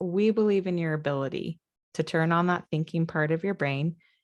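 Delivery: normal talking voice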